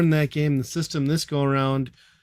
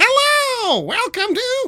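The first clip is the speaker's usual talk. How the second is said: ridiculous nasal voice, very high and loud; 5 dB louder than usual. Describing a man in online videos, imitating his nasally weird voice. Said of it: "it's just like this nasally, ridiculous thing".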